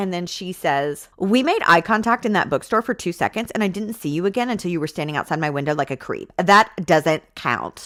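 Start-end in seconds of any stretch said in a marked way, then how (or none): none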